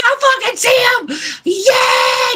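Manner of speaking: very high, drawn-out, unhinged goblin screech. Voicing a goblin losing his mind over spotting someone: goblin screaming. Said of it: "this goblin screaming the entire time".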